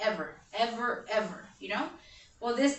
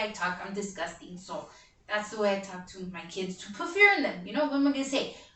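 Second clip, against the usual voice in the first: ordinary talk, nothing marked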